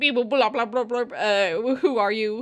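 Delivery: put-on spacey alien voice, beeping babble. Imagining aliens freeing someone from cryostasis: imitating aliens talking. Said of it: "The aliens are gonna get me out, and they're gonna be like".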